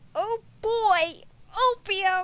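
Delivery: high, cartoonish put-on character voice. Playing a video game, voicing a character, in a cartoon character voice. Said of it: "Sound like a cartoon character".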